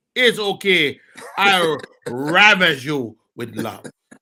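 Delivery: amateur, put-on, fake Jamaican accent. Joking about a lady's trip to Jamaica after reading a note: put-on Jamaican accent. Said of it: "That's your Jamaican accent?".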